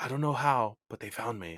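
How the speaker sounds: deadly serious, grave, ominous tone. Quoting the most ominous line delivery in the movie, imitating Doc Brown very seriously. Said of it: "so serious".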